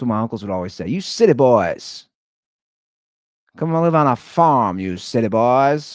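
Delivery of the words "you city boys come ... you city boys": put-on old-time 1920s gangster voice. Speaker quotes what his uncles would always say, in a 1920s gangster voice. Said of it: "I turned my uncles into nineteen twenty gangsters".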